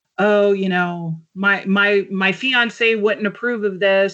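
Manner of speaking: usual speaking voice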